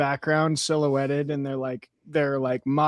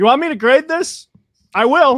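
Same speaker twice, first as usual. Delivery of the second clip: very loud, high, shrill, fed-up exasperated yell; 11 semitones higher, 10 dB louder than usual. Retelling losing patience with upper schoolers: imitating own yell. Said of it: "looked over at them and yelled".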